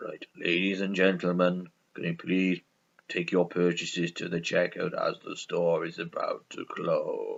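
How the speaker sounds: very low, quiet, dull, flat monotone drone. Picked for having the most boring voice, the speaker announces in a boring announcement voice. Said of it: "Who's got the most boring voice out of us?".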